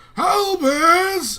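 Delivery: very loud, very high, drawn-out shriek. Reading a book title written with exclamation points, screamed name albus. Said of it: "it would be screamed because that's how it's written".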